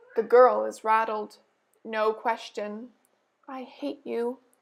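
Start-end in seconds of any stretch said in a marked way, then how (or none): 3.4-4.3 hushed, hate-filled half-whisper. Narrator reading a girl's line in a story, half-whispering. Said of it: "she whispers".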